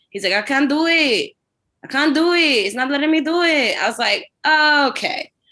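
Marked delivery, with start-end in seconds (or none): 0.3-3.7 put-on Mexican accent, pitched up. Retelling what the agent checking their bags said, mexican accent. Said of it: "I can do this accent because he was Mexican".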